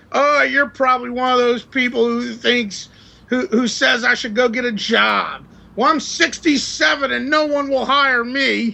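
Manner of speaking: mild half yell, ranting. Retelling what a panhandler at a light said: imitating someone yelling. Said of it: "this guy starts yelling at me".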